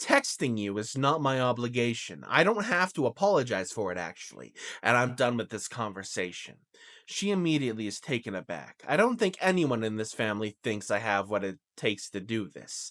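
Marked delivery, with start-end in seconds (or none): none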